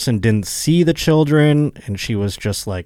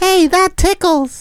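bad, very high, squeaky puppet voice; 4 dB louder than usual. Asked to do a character, the speaker performs a short bit in Elmo voice. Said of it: "It's Racist Elmo".

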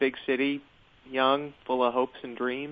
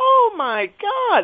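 high, slow, feigned delight and excitement. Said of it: "sounded feigned".

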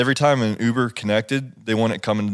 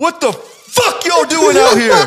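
shrill, very high, full-volume screaming; 9 dB louder than usual. Retelling how a man leaned out a car window: imitating a man screaming. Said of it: "Just screamed at us".

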